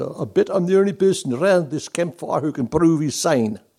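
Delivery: put-on thick South African accent. Storyteller quotes a mercenary beside a jungle campfire, thick south african accent. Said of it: "he said in this thick accented South African accent".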